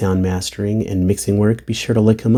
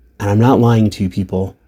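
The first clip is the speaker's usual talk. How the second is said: ordinary delivery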